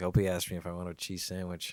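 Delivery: plain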